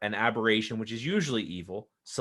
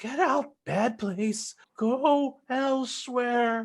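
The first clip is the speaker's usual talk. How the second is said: very strange, very high-pitched voice; 14 semitones higher than usual. [name] tries to shoo the others out, speaking in a very strange voice. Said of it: "she's saying with a very strange voice".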